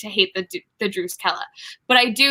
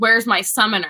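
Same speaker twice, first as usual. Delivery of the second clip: mock-possessive, acted out. Recapping episode six, acting out a character's line: mock-possessive demand. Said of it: "and it's very possessive".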